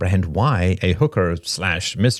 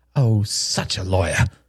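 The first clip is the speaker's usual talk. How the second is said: slow, spat-out words. Helen retorts after Robert denies saying it: spat. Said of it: "spat Helen".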